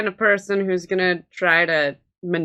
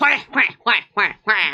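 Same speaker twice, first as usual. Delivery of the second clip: put-on villain quacking voice; 3 semitones higher than usual. Joking at the table with quacks, as the Penguin from 1960s Batman. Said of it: "it's the penguin from the sixties Batman".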